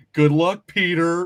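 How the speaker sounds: put-on high, sassy teenage delivery. Retelling a movie moment where a character sounds odd: Punisher line as a sassy sixteen-year-old. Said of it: "he sounds like a sassy sixteen-year-old".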